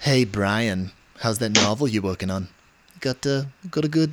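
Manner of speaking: put-on posh cartoon baby voice. After admitting he has one, the speaker does his Stewie impression. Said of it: "I do have a pretty good Stewie impression".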